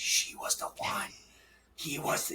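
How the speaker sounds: hushed, whispered voice. Retelling how other runners talk about these runners: imitating people whispering.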